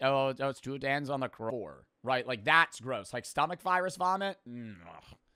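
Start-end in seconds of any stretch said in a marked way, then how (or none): 0.0-1.9 put-on Toronto street slang accent. Mocking the slang just heard from another speaker: imitating Toronto slang accent. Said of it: "What part of Canada is that where they're like".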